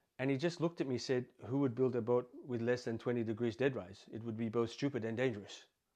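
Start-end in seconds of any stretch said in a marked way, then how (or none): 1.5-5.7 bad, rough put-on Finnish accent. Retelling a reply heard on a boat demo in Helsinki: bad Finnish accent. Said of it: "I don't do a good Finnish accent".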